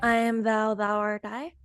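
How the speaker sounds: half-hearted delivery without conviction. Asked to say the phrase again during play, lacking conviction. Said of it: "Needs more conviction".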